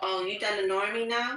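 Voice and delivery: play-acted, come-hither seductive tone. Retelling what a man said on the phone: imitating a seductive voice. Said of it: "With that seductive voice".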